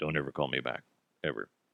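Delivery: very low, flat, depressed and hopeless drone. Doing a rarely done impression of Bill Belichick: Bill Belichick voice, mock-depressed. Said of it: "I don't do the Bill Belichick voice very often. It's basically you got to sound like you're really depressed".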